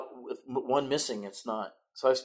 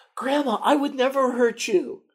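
mock tearful boy voice, much higher; 14 semitones higher, 8 dB louder than usual. Speaker retelling how a tough kid answered his grandmother, imitating a tearful boy. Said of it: "tears in his eyes".

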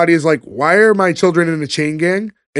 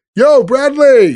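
brash, loud, high, casual call; 7 semitones higher, 5 dB louder than usual. Retelling a scene where someone calls over the fence: imitating a loud call. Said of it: "It's so fucking loud".

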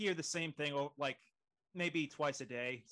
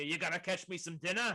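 loud calling voice; 3 semitones higher than usual. Describing an uncle-like boat captain greeting you aboard, retelling a captain's shout. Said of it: "he shouts at you".

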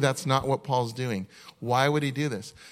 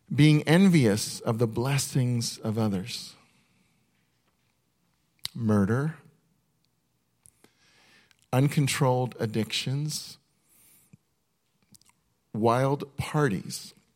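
slow, unhurried reading aloud. A speaker reading a list aloud to listeners, one item at a time: reading slowly. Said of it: "I'm going to read it slow".

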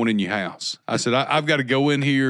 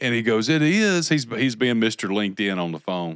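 normal talking voice

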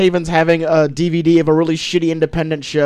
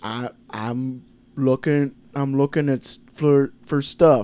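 put-on slurred mumbling voice, quieter; 2 semitones lower, 5 dB quieter than usual. Mocking a movie trailer's lead actor: Tom Hardy slurred impression. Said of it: "Tom Hardy in this movie talks like he had a stroke yesterday".

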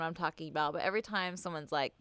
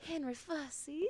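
put-on very hushed, soft, high, sultry Southern accent; 8 semitones higher, 10 dB quieter than usual. Retelling a running joke from a play, the speaker says the name: sexualized Southern accent. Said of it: "really like sexualized porno like Southern accent".

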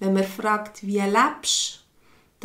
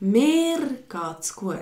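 mir stressed, said clearly and distinctly; 4 semitones higher than usual. Explaining what stressing means, the sentence said clearly and distinctly. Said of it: "was heisst betonte, wenn man es deutlich sagt und klar".

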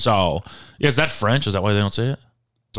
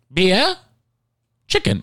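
very high, sing-song, made-up fake European accent; 9 semitones higher than usual. Repeating the other speaker's words to guess the accent: vague European-sounding accent. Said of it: "Did you know what accent I just did?".

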